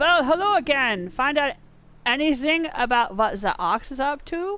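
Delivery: clumsy, unintended, bad German accent. Reading a game character's dialogue aloud: bad German accent. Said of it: "my bad German accent".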